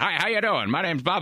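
put-on high, old-fashioned, old-timey voice. Retelling how a man who walked up introduced himself, old timey voice. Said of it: "he's got like an old timey voice".

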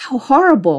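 high-pitched horrified cry. A frightened traveller who has fallen to the floor; crying out in horror. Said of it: "he cried out".

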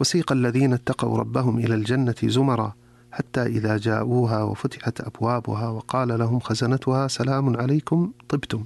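ordinary talk

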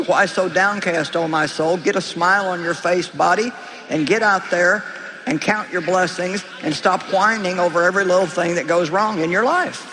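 normal talking voice

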